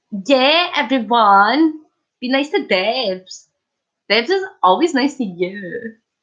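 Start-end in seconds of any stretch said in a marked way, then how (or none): 2.2-5.9 put-on Scottish accent, ballet girl type. Telling the chat to be nice to debs: scottish ballet girl impression. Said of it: "That's my Scottish girl ballet impression".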